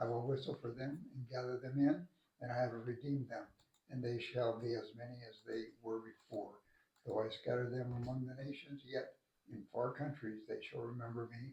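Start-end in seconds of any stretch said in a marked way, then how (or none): none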